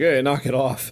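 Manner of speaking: normal talking voice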